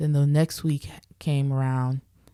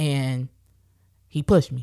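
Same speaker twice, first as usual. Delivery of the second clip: ordinary talk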